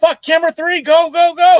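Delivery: high, loud screaming. Retelling backstage orders screamed by Dave Marquez: imitating Dave Marquez screaming. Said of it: "Dave Marquez screaming at the top of his lungs".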